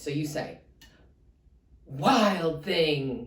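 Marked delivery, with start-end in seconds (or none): 1.9-3.3 loud, big call with the word wild drawn out. Reading a story aloud, the mother calling Max, in a loud voice. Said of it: "we say it with a loud voice".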